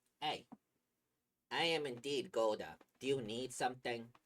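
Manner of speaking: put-on loud, strong Brooklyn accent. Voicing the character Golda answering a question, with a good old Brooklyn accent. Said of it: "give him the like good old Brooklyn treatment".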